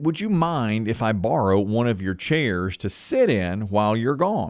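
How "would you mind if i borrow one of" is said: usual speaking voice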